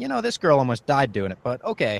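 plain

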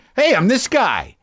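pumped-up presenter voice. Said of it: "we're talking like this".

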